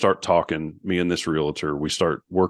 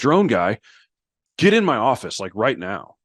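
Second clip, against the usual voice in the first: mock frantic, urgent, freaked-out, high and swooping; 6 semitones higher, 4 dB louder than usual. Retelling how a lady called him into her office, imitating a freaked-out woman. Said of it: "that lady was she freaked out".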